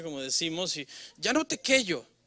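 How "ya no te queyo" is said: put-on serious, pouty, sulky high small-child voice. Describing how children act when they sulk, imitating a sulky child's little voice. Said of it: "Y se ponen así bien serios".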